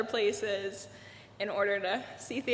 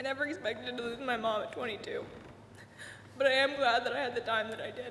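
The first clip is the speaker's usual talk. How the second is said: speaking through tears. A daughter speaks about losing her mom, crying while speaking. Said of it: "I'm currently crying".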